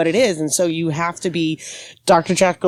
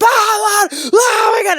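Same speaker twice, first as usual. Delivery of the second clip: imitated yell, higher pitch; 4 dB louder than usual. Imitating the chaos out back in the kitchen: imitating kitchen staff yelling. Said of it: "everyone's yelling at each other".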